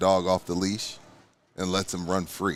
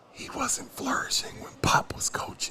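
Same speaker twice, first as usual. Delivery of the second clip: hushed, whispered, lowered voice; 5 dB quieter than usual. Talking about Pop's coaching, in a quiet voice. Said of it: "I'm gonna say this in my quiet voice".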